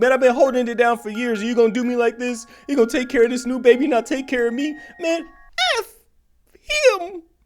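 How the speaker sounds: really high-pitched put-on voice. Imagining how commenters in the Reddit comments sound, in a really high-pitched voice. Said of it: "A really high pitched voice like that".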